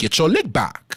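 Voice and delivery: accent of Southeast DC. Quoting a viral clip from a show the speaker never watched: Southeast DC accent. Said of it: "in my best Southeast D C accent".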